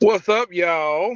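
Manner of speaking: high, loud cartoon-character voice. Greeting everybody as the special guest: sounds like a cartoon character. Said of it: "You sound like a cartoon character".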